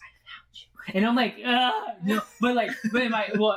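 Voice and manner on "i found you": creepy, eerie, hushed whisper. Retelling what something said to them, retelling a whisper. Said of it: "in a whisper, it goes".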